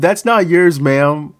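put-on sassy, pointed tone with attitude. Retelling what a woman said to an old lady who took a bag, mimicking saying it with attitude. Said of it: "she said with an attitude".

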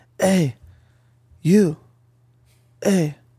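mock timid, uneasy, scared, nervous voice. Retelling how someone at the gym called out: imitating a scared voice. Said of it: "he was scared".

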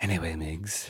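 eerie put-on voice, very hushed and creepy. Teasing the other speaker by name, addressing him in a creepy voice. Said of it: "that's the creepy voice".

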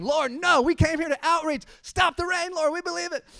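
energetic, shrill, very high, loud shout. Retelling a prayer for the rain to stop: imitating Brandon shouting. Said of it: "just starts shouting".

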